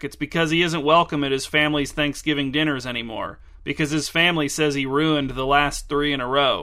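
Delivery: plain reading voice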